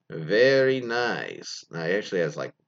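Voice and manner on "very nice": rolling r's, nicely drawn out. Reading out number ten, quoting a boyfriend: Borat impression, rolled R's. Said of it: "in his best Borat impression".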